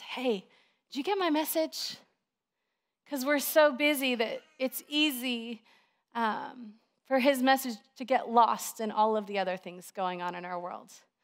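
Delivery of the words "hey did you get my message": speaking in a hushed whisper. Acting out God whispering a question to busy people: imitating God whispering. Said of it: "he just kinda whispers at us".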